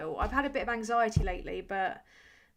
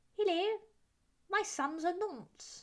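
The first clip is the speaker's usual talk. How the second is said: barely-there regal voice, pitched higher; 9 semitones higher, 4 dB quieter than usual. After admitting to being terrible at accents, try one briefly, slight impression of the Queen. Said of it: "very slightly do ... is the Queen".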